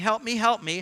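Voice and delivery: ordinary talk, nothing marked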